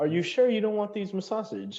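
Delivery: very high elven attendant voice. Voicing an elven male at the bathhouse front desk greeting adventurers: elven male clerk voice. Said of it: "he goes".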